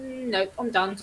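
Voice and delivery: ordinary talk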